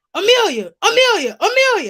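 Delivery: very loud, swooping hollering. Retelling how an unknown girl called out to her, imitating someone hollering. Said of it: "one girl started hollering at me".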